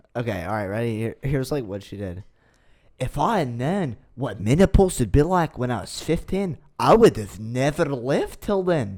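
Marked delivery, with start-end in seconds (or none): 3.0-9.0 put-on, attempted Scottish accent. Retelling a woman's words after being urged to try, attempted Scottish accent. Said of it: "I can't even do a Scottish accent".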